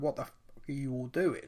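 ordinary delivery

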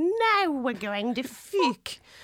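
put-on slow, high weird New York accent, Australian bleeding through. Quoting a woman's classic line to a co-host, weird New York accent. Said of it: "She's doing like a weird New York accent. ... but it still sounds Australian".

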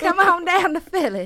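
loud, high, booming put-on southern country accent. Podcast host inviting listeners to Philly, in a put-on southern accent. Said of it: "you know she loves to do a southern accent".

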